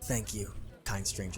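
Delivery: put-on very quiet, quick, rough young gravelly voice. A character thanks you, a stranger: young gravelly voice. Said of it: "He kind of has this like gravelly voice".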